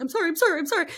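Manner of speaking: very high-pitched, paranoid, cowering, terrified pleading. Retelling a phone call, imitating Brandon's terrified apology. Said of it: "kind of like paranoid and terrified".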